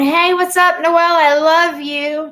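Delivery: high, loud, syrupy fake-sweet friendliness. Mocking people who insult her online, then greet her: imitating a fake-friendly greeting. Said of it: "and then you come in here going".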